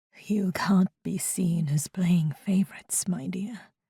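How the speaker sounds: weary, tired, hushed whisper. Reading a story aloud, voicing a king: tired whisper. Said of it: "King Jean whispers in a tired voice".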